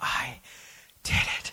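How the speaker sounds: mock drained, spent, unvictorious relief. Retelling finishing and almost collapsing, acting out an exhausted 'i did it'. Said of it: "It was more like a".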